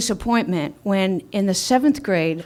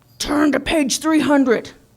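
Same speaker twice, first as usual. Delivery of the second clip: put-on angry teacher voice, high, booming bellow; 6 semitones higher than usual. Speaker retells a teacher coming into class and addressing the students: retelling a teacher's bellow. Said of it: "he bellows out to us".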